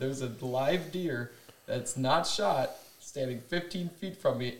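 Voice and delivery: ordinary talk, nothing marked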